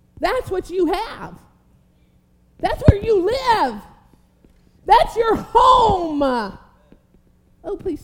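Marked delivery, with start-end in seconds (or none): 0.2-6.2 loud, high preacher's yell at full volume. Preaching to listeners about living in union with god: yelling. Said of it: "someone help me stop yelling".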